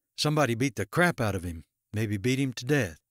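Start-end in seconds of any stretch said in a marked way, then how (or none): none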